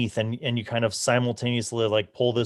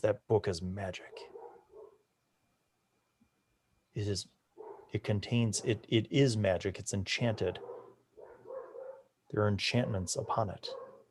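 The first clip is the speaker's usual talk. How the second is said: hushed, very quiet, breathy, barely voiced whisper; 2 semitones lower, 10 dB quieter than usual. Game master voicing Ernest after he walks over: Ernest whispering. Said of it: "and he whispers, he goes".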